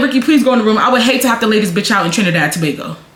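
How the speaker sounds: usual speaking voice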